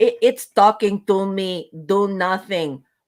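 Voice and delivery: put-on urgent, yelled delivery in a Russian accent. Retelling a scene, the speaker quotes Janeway yelling in a Russian accent. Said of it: "Olga from Russia yells".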